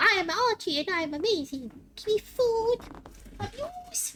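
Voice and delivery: made-up pet voice, pitched very high. Showing how the family gives their dog a voice: Archie the dog's voice. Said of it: "make a voice for him like".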